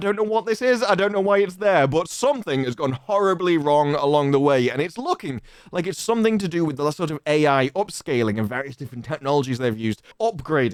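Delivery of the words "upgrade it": scornful, mocking, heavy sarcasm. Reacting to a game's upgraded visuals, said sarcastically. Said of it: "I mean it sarcastically".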